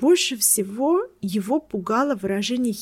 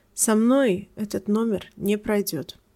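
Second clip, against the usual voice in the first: usual speaking voice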